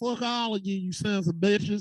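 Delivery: put-on attempted southern American drawl. Speaker insists on sticking to a southern accent: put-on southern accent. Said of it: "I'm stick to my southern accent".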